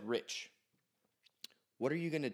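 acted-out, very grave, dead-serious tone. Retelling how the daughter's mother sat him on the bed, acting very serious. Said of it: "like the most serious she's ever talked to me".

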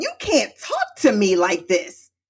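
put-on crying, upset, tearful outburst with swooping pitch. Retelling own words after finally getting upset: retelling own upset crying outburst. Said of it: "I'm crying".

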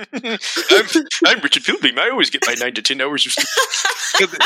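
high, swooping, put-on mocking voice. Teased about getting little sleep, the speaker mocks Richard in a make-fun-of voice. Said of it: "That's the voice you use when you make fun of Richard".

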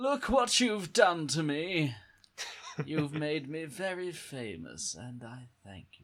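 weird, creepy movie-villain voice. In character, ringing people you haven't spoken to in five years, in a weird Bond villain voice. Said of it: "You sound like a weird Bond villain".

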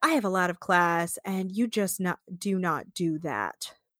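put-on offended, disgusted, disdainful tone. Quoting Rodeo in a talking head: imitating Rodeo sounding repulsed. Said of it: "so repulsed by her bodily noises".

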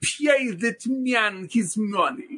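put-on over-the-top Russian accent. Showing how he talks as the Russian poker master in Rounders, Malkovich's over-the-top Russian accent. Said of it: "he literally talks like this".

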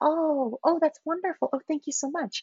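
very high, soft, placating and appeasing tone. Showing how someone trying to appease sounds: demonstrating appeasing tone. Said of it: "my voice gets higher and softer".

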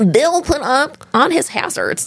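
nerdy put-on voice. Reading a quote aloud after being told to get nerdier, extra nerdy voice. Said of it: "Get nerdier".

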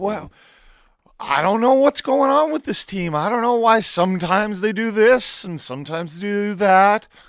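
put-on puzzled surprise. Mocking a coach's post-game comment about the Canucks: imitating Bruce Boudreau acting surprised. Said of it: "Bruce Boudreau acting completely surprised".

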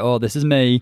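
put-on thick, full-strength Lancashire accent. Imagining a contestant showing her real self: strong Lancashire accent. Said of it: "she'll actually have, like, a strong Lancashire accent".

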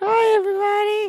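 very high, small, piping tiny toy voice. Voicing a little Fortnite man toy on the microphone. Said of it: "I even have a little Fortnite man on my microphone".

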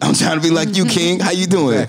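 hyped, excited, energetic delivery.

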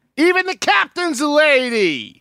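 very high, shrill shout, drawing out lady. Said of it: "stop yelling".

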